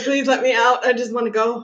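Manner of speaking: normal talking voice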